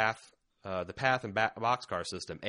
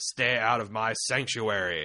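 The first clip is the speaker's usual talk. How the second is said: put-on growling character voice; 2 semitones higher, 6 dB louder than usual. Describing a hoped-for scene, voicing Rick facing Gareth: Rick growling. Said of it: "looks at Gareth in the eye and growls".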